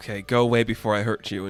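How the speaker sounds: crying, tearful outburst, words breaking through sobs. Retelling a comic scene where a character breaks down: imitating someone crying. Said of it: "Jess breaks down crying, like".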